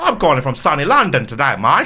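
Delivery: loud, oddly off, put-on Cockney accent. Recalling call-centre callers, the speaker imitates them in a weird Cockney accent. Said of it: "they're doing like a weird Cockney accent".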